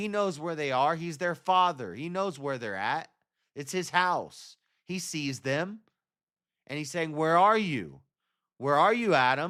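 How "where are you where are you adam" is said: fatherly, paternal tone of voice. Acting out God calling to hiding Adam: like a father with a child. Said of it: "like a father with a child saying".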